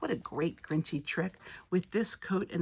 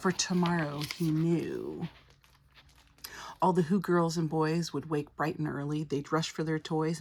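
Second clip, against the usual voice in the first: ordinary delivery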